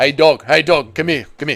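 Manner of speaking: mock flirtatious tone. Answering a chat request to imitate Israel Adesanya flirtatiously calling his dog. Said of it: "do an impression of Israel Adesanya barking to his dog to flirt with it".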